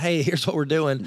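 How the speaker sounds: normal talking voice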